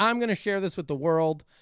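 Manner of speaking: plain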